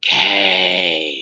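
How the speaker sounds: low, drawn-out, weird, eerie monster voice. Retelling something calling a name through a window, weird monster voice saying kay. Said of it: "in a weird monster voice".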